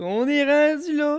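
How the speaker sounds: excited, insistent delivery.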